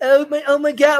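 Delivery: put-on Valley Girl accent. Mocking how an actress suddenly talks: imitating a Valley Girl accent. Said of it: "have a Valley Girl fucking accent".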